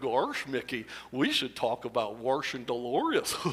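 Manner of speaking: soft, hushed, swooping, sing-song cartoon dog voice. Recalling characters once performed, doing a line in Goofy voice. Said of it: "Or Goofy was even better".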